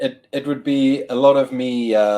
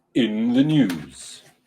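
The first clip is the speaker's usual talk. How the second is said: lowered, deep, weighty voice. Asked by the host to introduce the show segment: low voice. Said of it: "You have to do it with a low voice".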